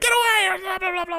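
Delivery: very high, panicked, freaking-out yelp. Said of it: "he's freaking out".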